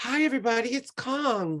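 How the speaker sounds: very high, sweet, sugary voice, one word stretched. Describing how a woman's natural speaking voice sounds, imitating her sweet natural voice. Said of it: "It's very like this".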